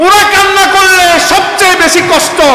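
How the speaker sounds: impassioned, high, slow, wailing preacher-style shout.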